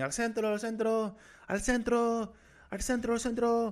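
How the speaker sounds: shrill, very high screaming, repeated over and over. Retelling a kid hanging out of a bus calling out, imitating a kid screaming. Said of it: "And he's just screaming".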